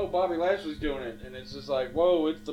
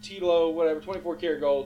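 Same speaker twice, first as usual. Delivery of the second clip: normal talking voice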